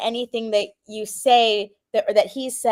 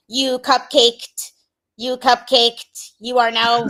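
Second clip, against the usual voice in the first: put-on AI robot voice, louder; 4 dB louder than usual. Joking about online judgment, voicing an AI robot: imitating an AI robot. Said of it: "it's like an A I robot being like".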